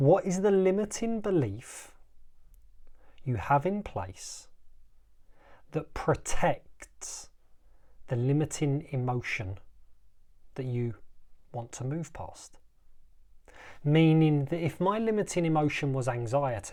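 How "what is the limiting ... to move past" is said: slow, halting, deliberately slowed dramatic delivery. Repeating a question to listeners so they understand: slower, for dramatic effect. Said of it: "I'll say that again slower".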